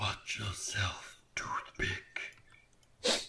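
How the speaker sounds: breathy, eerie, possessed whisper like something else. Voicing a voice that comes out of her as her eyes darken: possessed voice. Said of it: "a voice just comes out of her".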